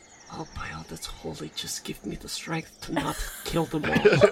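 muttering stage whisper. Voicing a character standing there, half-whispering to herself. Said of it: "whispering to herself like".

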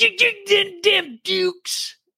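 very high, squeaky, stammering character voice. Doing an impression of a goofy sheriff from Dukes of Hazzard: Roscoe P. Coltrane impression. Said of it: "I can do one from that too".

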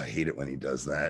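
low, put-on, completely unbothered, offhand aside. Retelling a scene, quoting Darhk: imitating nonchalant Darhk. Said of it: "Dark is completely nonchalant".

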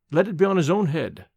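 ordinary delivery, nothing marked

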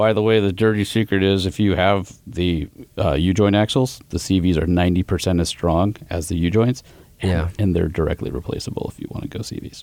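hushed, secretive half-whispered aside. Sharing a dirty secret about axles that not everybody knows: half-whispering. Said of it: "Why were you whispering like that?".

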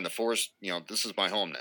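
normal talking voice

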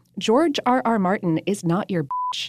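ordinary talk

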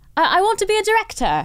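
bad put-on British accent. Asked by the other speaker to do it again, the speaker does a bad british accent. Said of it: "do it again".

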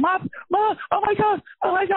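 mock shrill, high, terrified wailing scream, drawn out. Recalling heavy turbulence on a plane, the speaker reenacts screaming for mom. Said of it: "I was screaming my mother's name".

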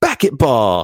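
put-on high, happy, gleeful, intense, insistent toddler voice. Retelling how he insists when corrected; imitating a child insisting happily. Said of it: "say it more intensely and more happily".

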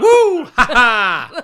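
very high, loud whoop followed by a laugh. Comparing it to a similar impression: Will Smith impression. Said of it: "the Will Smith one".

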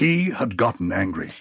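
classical stage-actor voice, declaiming. Discussing a phrase's wording with others, saying it in a shakespearean voice. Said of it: "in a Shakespearean voice".

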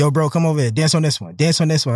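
ordinary delivery

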